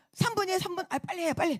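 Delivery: put-on irritated, impatient snap. Speaker retells how a person reacted to being asked to move aside, mimicking an irritated snap. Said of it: "막에서 성질을 내면서".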